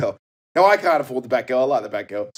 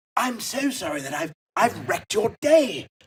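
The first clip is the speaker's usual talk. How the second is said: put-on posh English accent, higher; 8 semitones higher, 3 dB quieter than usual. Retelling bumping into a man on a bike: imitating Jacob Rees-Mogg. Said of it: "It was a caricature".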